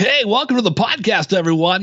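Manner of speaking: high, showy, big radio announcer voice. Mocking a fake podcast opening: mock big radio voice. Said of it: "there's no big radio voice".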